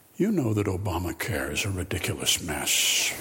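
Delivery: very low voice.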